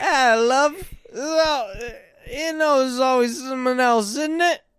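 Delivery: high-pitched, slow, drawn-out put-on British accent. Doing a British accent on request for the other speaker: put-on British accent. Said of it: "a British accent real quick?".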